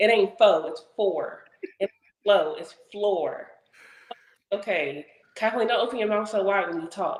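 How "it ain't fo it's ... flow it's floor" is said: put-on careful, precise enunciation. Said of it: "she said".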